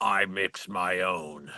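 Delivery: low, very slow, muttered orc voice. Retelling what a vape snob said to them, quoting him in an orc voice. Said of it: "make him sound like an orc".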